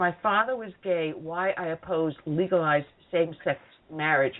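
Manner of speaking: usual speaking voice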